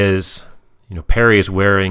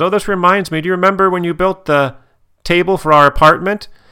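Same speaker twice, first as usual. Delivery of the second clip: sweet reminiscing voice, high-pitched. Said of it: "and then she says".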